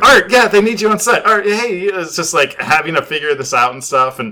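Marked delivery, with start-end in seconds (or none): 0.0-1.8 put-on yelling, higher and louder. Retelling calling out for the art department on set: imitating own yelling. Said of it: "So it's like yelling".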